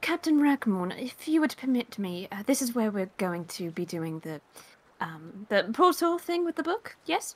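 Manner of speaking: quiet, soft character voice. Honeymoon totters over to Captain Rackmorn once they have arrived, speaking quietly. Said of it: "kind of says quietly".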